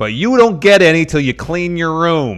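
put-on high, nagging, scolding mother-style voice. Joining another speaker's mom impression, the speaker talks in a mom voice. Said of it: "taking mom tones".

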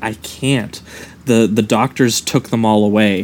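ordinary talk, nothing marked

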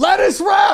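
put-on yelling. Retelling ordering food through plexiglass at a counter, retelling a yelled order. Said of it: "when you're yelling lettuce wrap".

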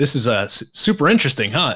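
mock wry, joking sarcasm with swooping pitch. Retelling a joking remark made during a judging session: retelling own sarcastic remark. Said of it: "being a little sarcastic".

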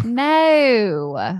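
put-on Australian accent with drawn-out no. Trying the accent after being told to elongate the vowels: put-on Australian accent. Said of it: "Like that?".

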